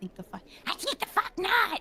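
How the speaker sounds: very high-pitched, scratchy gremlin or goblin voice. Giving a quick example after being asked: scratchy goblin voice. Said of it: "I'd do some scratchy goblin shit".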